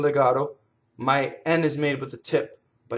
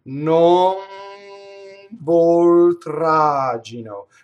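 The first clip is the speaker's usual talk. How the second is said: "non voltraggino" very slow, raised, every sound stretched; 3 semitones higher, 6 dB louder than usual. An instructor shows the consonant position again, in slow motion. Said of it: "in slow motion".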